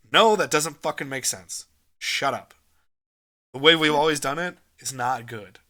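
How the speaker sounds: blunt, dismissive tone. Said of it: "I love when someone can just cut through shit and just goes".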